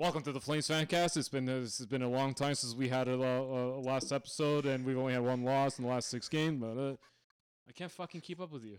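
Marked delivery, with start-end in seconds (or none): 0.0-6.6 loud, mechanical, robot-like announcer delivery. Imitating the other speaker's podcast intro: imitating a robotic delivery. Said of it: "you start off this whole thing robotically".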